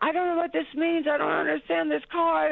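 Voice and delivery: high, baffled, bewildered, confused yell. Retelling shouting back at a man yelling up from a pickup: retelling own past yelling. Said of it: "And I'm yelling like".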